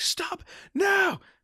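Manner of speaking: put-on very high, high-pitched screamed crying. Retelling the film's ending, the character at the last channel: imitating someone screaming.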